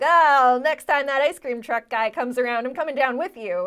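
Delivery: very loud, put-on, heavy Long Island accent. Imagining a parent confronting the ice cream truck driver: imitating a Long Island dad, thick accent. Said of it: "some Long Island dad being like".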